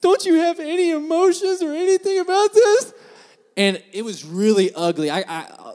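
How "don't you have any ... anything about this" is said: put-on very high, loud, tearful crying plea. Retelling a partner crying at a sad movie ending: imitating someone crying. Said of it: "tears coming down her face".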